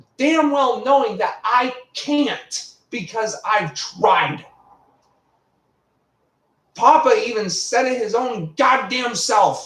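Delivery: slow, angry snapping with every word drawn out. Arguing with someone who then tells them to calm down: angry snapping. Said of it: "There's no need for snapping".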